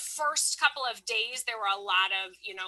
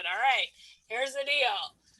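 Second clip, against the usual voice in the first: stern, no-nonsense classroom teacher tone; 3 dB louder than usual. Teacher recalls addressing students who were not filling out reading logs, in teacher voice. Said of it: "I did my teacher voice".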